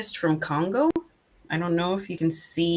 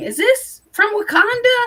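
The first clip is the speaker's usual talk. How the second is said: put-on excited squealing, very high and really loud; 7 dB louder than usual. Describing how you react on seeing crystals from certain places, imitating your loud squealing. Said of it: "making really loud squealing".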